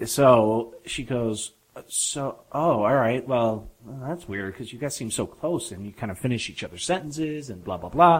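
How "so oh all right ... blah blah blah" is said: plain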